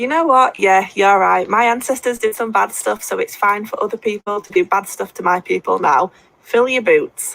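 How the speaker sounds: ordinary talk, nothing marked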